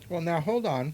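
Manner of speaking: talking while chewing, through a mouthful of food. Eating pizza on air, the speaker interrupts themself, talking with mouth full. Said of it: "Excuse me while I swallow my mouthful of food".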